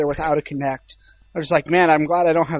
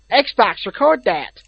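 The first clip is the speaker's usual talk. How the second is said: clumsy, bad, fake, put-on American accent; 4 semitones higher than usual. Mimicking how the other person said a command to xbox, bad american accent imitation. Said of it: "I'll try to imitate what you said".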